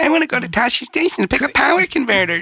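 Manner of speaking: loud, high-pitched whine. Joking during a reading, imitating a whiny young character: whiny Luke Skywalker voice.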